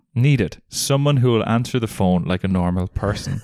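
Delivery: ordinary talk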